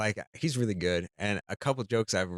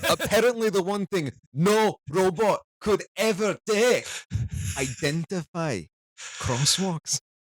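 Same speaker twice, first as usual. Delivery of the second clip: put-on high, loud, belted-out Scottish accent; 10 semitones higher, 5 dB louder than usual. Performing a robot-check joke he wrote, in a Kevin Bridges Scottish accent. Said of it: "wrote that in a Scottish accent".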